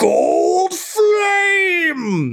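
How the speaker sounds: very high, swooping battle yell. Game narrator voicing a talking blade as the player strikes; Sunscythe yelling. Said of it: "you just hear it yell".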